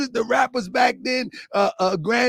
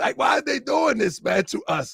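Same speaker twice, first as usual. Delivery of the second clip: usual speaking voice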